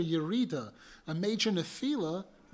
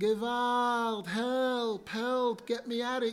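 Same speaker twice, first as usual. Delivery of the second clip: mock screaming at a much slower pace; 4 semitones higher than usual. Describing a man trapped deep in a mine, retelling a scream for help. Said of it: "And he's screaming".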